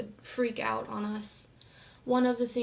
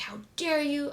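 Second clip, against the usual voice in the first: mock enraged, furious, outraged outburst; 4 semitones higher than usual. Recounting their father screaming in someone's face, the speaker imitates a furious scream. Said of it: "screaming. Just like".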